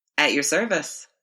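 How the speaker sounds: usual speaking voice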